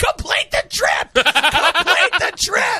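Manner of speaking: high, play-acted screaming, repeated. Retelling yelling at a driver in the middle of the street: imitating own screaming. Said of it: "I'm screaming".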